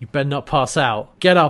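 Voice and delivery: ordinary talk, nothing marked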